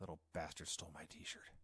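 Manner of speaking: hushed, whispered mutter under the breath. Retelling the last shot of a video: imitating Jericho muttering. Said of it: "you just hear him mutter".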